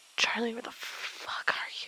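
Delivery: muttered under the breath. A player's character, lost in howling winds, calling for a companion: muttered to oneself.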